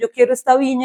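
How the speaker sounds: ordinary talk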